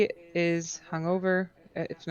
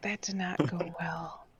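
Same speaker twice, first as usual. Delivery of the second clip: quiet, hushed whisper under the breath; 5 dB quieter than usual. Speaking in character to the others about a shopkeeper: whispering. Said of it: "I'm gonna whisper".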